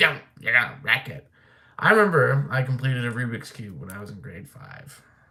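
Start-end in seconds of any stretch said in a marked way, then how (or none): 0.0-1.3 scolding, nagging voice. Recalling how she scolded them as a kid for fiddling with things, imitating her scolding. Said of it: "she'd be like".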